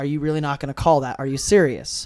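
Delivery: mock angry outburst. Retelling a player's reaction after a hit: imitating an angry outburst. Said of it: "immediately started going off me like".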